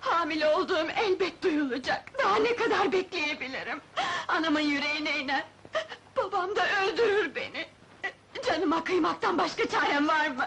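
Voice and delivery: words broken up by crying, tearful delivery. A pregnant girl whose lover ran off fears her father: crying. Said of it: "Ağlama".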